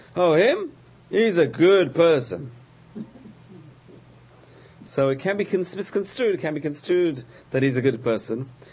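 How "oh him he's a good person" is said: loud, high, slow sarcastic tone. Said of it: "says something sarcastic".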